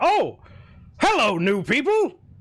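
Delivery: put-on hearty, jolly, boisterous older man voice, swooping pitch. Voicing a man who bursts into the tavern: boisterous jolly older man. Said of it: "very boisterous, jolly-looking man".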